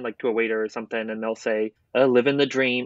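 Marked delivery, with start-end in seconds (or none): 2.0-2.9 mock sarcastic tone. Imitating a waiter answering a greeting: imitating a sarcastic reply. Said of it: "it's always so sarcastic".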